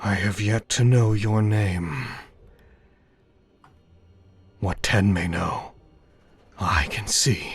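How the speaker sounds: warped, distorted, slow voice. Voicing a vast serpent speaking inside a vision: distorted voice. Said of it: "in a distorted voice".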